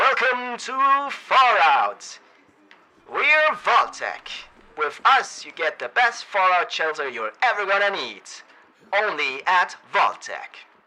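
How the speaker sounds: put-on loud, booming, swooping old radio announcer voice. Trying out voice effects, doing a mock Vault-Tec ad in an old radio voice. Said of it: "radio voice, like the old radio voice".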